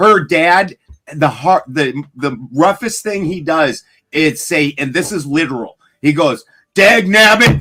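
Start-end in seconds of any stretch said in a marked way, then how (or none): 6.7-7.6 high, raised, mild and tame outburst. Retelling the wife's dad at his roughest: imitating him losing his temper. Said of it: "that is her dad losing his shit".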